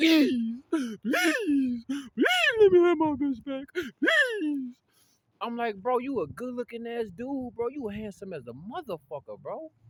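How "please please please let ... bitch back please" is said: very loud, high, tearful crying voice. Speaker acts out a man who came at him crying, imitating someone crying. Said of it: "He came at me crying".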